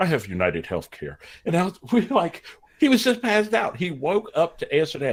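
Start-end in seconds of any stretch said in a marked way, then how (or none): 0.0-1.2 all prim and proper, voice dropped low. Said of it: "he gets all proper".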